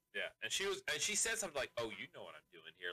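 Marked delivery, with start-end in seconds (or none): 1.8-2.9 playful, coy, evasive, teasing voice. Retelling a film scene where a woman teases a man: imitating a coy woman. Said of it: "she was all being coy with him".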